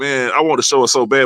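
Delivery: ordinary talk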